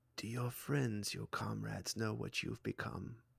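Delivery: hushed half-whisper, close in at the ear. Voicing a character who leans close to a player: half-whispering in your ear. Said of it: "as though he's whispering right in your ear".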